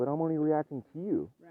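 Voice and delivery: put-on half-yell, mildly protesting. Retelling an argument with a partner who said he was yelling: imitating own past yelling. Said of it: "where I started yelling too".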